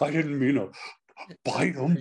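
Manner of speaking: fearful cartoon lion voice, quick, rushed. Answering a request for the motorcycle bit: Bert Lahr as Cowardly Lion. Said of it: "the Cowardly Lion, uh, on a motorcycle".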